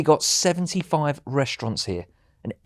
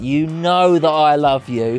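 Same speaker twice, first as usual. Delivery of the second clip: put-on shouting; 3 dB louder than usual. Retelling how the other speaker shouts at them: imitating Claire shouting. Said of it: "when you're shouting at me and saying things like".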